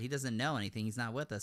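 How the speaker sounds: ordinary talk, nothing marked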